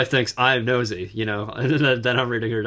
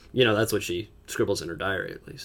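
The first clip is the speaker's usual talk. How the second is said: plain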